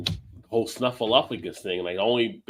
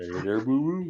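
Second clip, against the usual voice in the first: put-on cartoon bear voice, quieter. Joking with friends about the bear with a picnic basket, Yogi Bear voice. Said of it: "you sounded like Yogi Bear".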